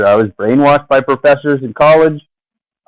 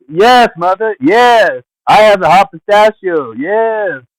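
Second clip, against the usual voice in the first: put-on dutiful, compliant voice, high and slow; 6 semitones higher than usual. Retelling answering parents downstairs: put-on switched personality. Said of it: "I have to sh- shift my personality".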